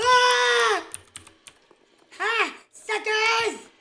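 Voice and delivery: full-on shrill loud scream, long drawn-out "ah". Taunting the chasers in a game, screaming. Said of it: "You sound like my freaking classmate that screams".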